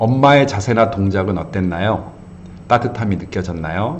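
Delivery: ordinary talk, nothing marked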